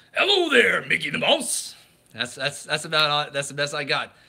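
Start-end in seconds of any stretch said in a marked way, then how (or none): 0.2-1.8 loud, rough, swooping cartoon villain voice. Running through impressions they can do, the speaker tries a Pete voice. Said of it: "trying to do Pete here".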